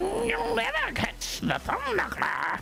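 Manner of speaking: put-on silly, goofy cartoon villain voice. Voicing the thumb knuckler after another player asks: silly cartoon villain voice. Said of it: "like a silly Adult Swim cartoon villain".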